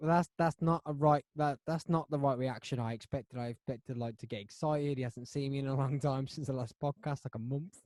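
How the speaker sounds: ordinary talk, nothing marked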